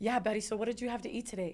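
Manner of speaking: put-on casual, offhand tone. Retelling how the doctor and nurse chatted while she lay crying, mimicking nonchalant chatter. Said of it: "they are so like nonchalant".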